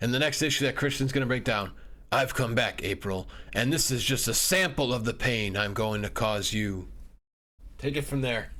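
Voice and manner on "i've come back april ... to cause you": low, deep put-on villain voice. Doing his best on the show in a Baxter Stockman voice. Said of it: "in a Baxter Stockman voice".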